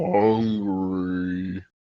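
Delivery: growling bear-like voice. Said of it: "growling like a bear".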